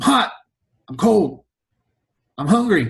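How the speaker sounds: high, swooping, sing-song, stretched-out delivery. Imitating a friend on a road trip: impersonating Thomas on a road trip. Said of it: "my impersonation of Thomas on a road trip".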